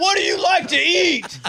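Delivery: very loud, very high, slow, awkward chit-chat tone. Retelling meeting the other speaker in a loud arena: imitating the other speaker. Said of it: "pretty good impression of me".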